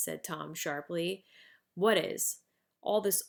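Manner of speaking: ordinary delivery, nothing marked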